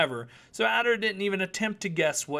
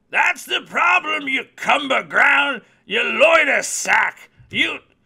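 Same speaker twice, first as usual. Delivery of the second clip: put-on very loud, sputtering, shrill and booming old-timey old-man ranting; 7 semitones higher, 9 dB louder than usual. Narrator reads the old merchant insulting Adder and the tree man: old merchant hurling insults. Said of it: "Even [name] had some serious doubts about working for an old man whose fur was redder than blood and an albino smith / the merchant put his bearded face next to [name]'s, resting the tip of his cane o".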